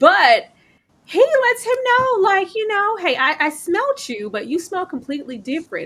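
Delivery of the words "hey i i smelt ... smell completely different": brief put-on New Orleans accent. Retelling what a vampire character says, in a put-on New Orleans accent. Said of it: "with his little one-off New Orleans accent".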